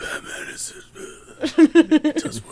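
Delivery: raspy, very high-pitched and loud voice.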